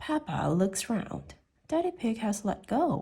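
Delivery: plain reading voice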